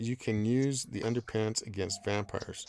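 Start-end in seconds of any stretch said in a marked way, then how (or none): none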